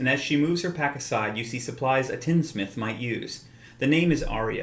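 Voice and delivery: ordinary talk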